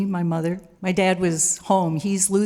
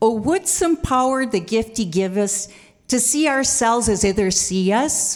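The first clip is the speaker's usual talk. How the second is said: put-on Midwestern accent; 3 semitones higher than usual. Quoting a line she used to say to the speaker: imitating her Midwest accent. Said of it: "she did it in her Midwest accent".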